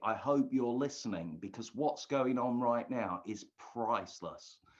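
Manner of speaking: ordinary talk, nothing marked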